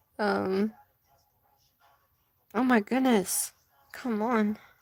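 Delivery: near tears, fighting to hold it together. Adding blue while talking to her audience, fighting back tears. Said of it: "I'm trying not to cry".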